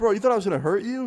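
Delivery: very high voice, laughing and giggling through words. Retelling how a stranger holding a knife reacted: imitating someone giggling while talking. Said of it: "he starts giggling. He's, like, laughing".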